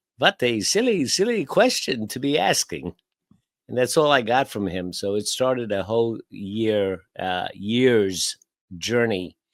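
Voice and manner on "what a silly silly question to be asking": put-on sing-song Hungarian accent, rolled out. Recalling a man's answer to his question, Hungarian Dracula-like accent. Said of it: "in his Hungarian Dracula like accent".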